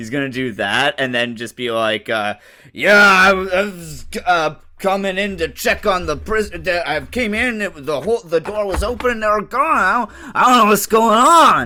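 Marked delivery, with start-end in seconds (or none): 2.1-11.7 put-on dumb guy voice, much higher, slower. Acting out a character in a comic bit, in a dumb guy voice. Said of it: "It's just a dumb guy voice".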